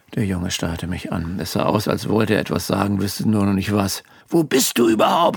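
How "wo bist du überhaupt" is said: loud screaming. A mother on the phone with her child, screaming. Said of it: "schrie meine Mutter".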